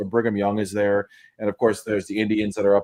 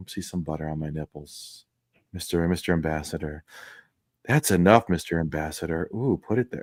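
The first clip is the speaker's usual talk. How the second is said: put-on seductive voice, lower and quieter; 5 semitones lower, 5 dB quieter than usual. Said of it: "Mike talking about suckling nipple".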